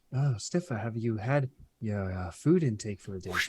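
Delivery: put-on half drunk with drowsiness, sleep-drunk, groggy. A character pulls food from his pocket for a friend, half drunk with sleepiness. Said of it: "still like kind of half drunk from like sleepiness".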